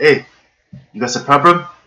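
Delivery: typical Korean father voice. Showing an impression of a typical Korean father asking if something's wrong: imitating dad. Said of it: "the best impression of him".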